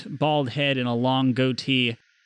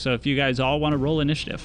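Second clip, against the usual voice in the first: plain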